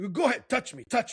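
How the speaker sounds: put-on heated angry voice. Retelling what someone nearby kept saying during the ride, imitating someone angrily. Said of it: "like like angrily".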